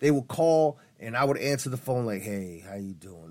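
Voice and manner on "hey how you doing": deep, very hushed, real low, very quiet voice. Retelling answering the phone to callers during an April Fool's joke, real low tone. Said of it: "Like real low tone".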